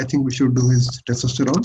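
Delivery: ordinary talk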